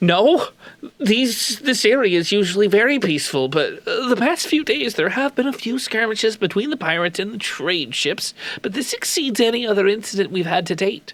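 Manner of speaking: uneasy, on-edge, nervous delivery. Asked whether these attacks are normal, the director responds in a nervous tone. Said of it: "The director responds in a nervous tone".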